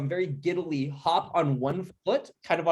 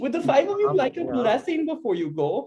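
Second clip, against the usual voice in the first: animated put-on German character accent, pitched high; 9 semitones higher than usual. Voicing a german character offering the group a blessing: put-on german accent. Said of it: "we didn't have a German character".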